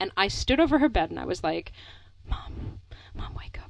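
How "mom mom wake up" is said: very hushed, slow, breathy, drawn-out whisper. Retelling standing over a sleeping parent at night: imitating a whisper. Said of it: "whispering in the dark into your face".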